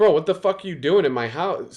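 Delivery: mild, reined-in half-yell. Retelling finding a stranger in their house: retelling a yell. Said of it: "I was yelling at him".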